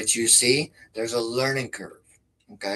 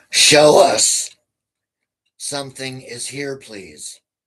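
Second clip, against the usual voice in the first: intense, forceful, very loud, aggressive delivery; 3 semitones higher, 11 dB louder than usual. Showing how tone changes a request, slightly intense, aggressive tone. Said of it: "Notice how my tone is being slightly more intense, slightly more aggressive".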